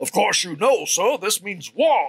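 high put-on cartoon voice. Picturing a glaring heron on a log, the speaker voices it as Foghorn Leghorn. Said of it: "with this foghorn, leghorn voice going".

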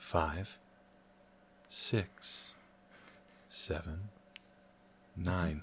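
asmr-style soft voice. Counting aloud as the episode's ASMR bit, in an ASMR voice. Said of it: "let me slip into ASMR voice".

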